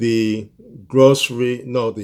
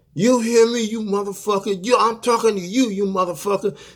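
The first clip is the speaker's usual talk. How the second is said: shrill, very high, furious screaming; 10 semitones higher than usual. Retelling what a woman screamed at him in a parking lot: retelling a woman's screaming. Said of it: "She's screaming and yelling".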